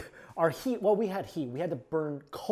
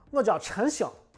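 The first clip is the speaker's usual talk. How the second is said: heavy Shanxi dialect accent, higher pitch; 6 semitones higher than usual. Showing how a name sounds in the dialect: Shanxi dialect accent. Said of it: "in Shanxi dialect, it'd be like".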